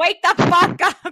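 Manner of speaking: put-on Boston accent. Repeating a line just quoted, now in a Boston accent. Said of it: "Like a Boston accent".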